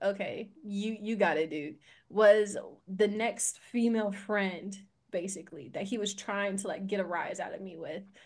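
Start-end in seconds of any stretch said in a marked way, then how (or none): none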